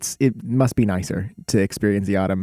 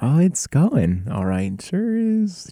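high, slow, unconvincing fake cheer. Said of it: "completely unconvincing".

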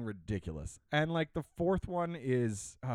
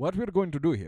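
bad put-on Arabic accent drifting toward Indian accent; 3 semitones higher, 3 dB louder than usual.

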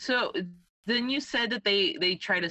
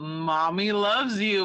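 put-on sarcastic voice; 4 dB louder than usual. Retelling what another speaker said on a bear recording: imitating a sarcastic "Mommy loves you". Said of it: "very sarcastically".

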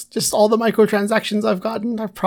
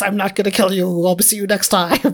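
mock pirate captain voice, put-on; 2 semitones lower than usual.

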